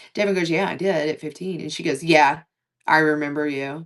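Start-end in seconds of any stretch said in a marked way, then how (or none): 2.1-3.9 put-on snooty, dismissive, low, snotty tone. Retelling a woman's reply to Devin about working at Wonderland, imitating a snotty tone. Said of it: "It was so snotty".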